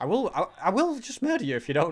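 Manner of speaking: voice breaks partway through. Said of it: "That was a weird voice crack".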